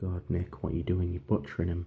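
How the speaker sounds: plain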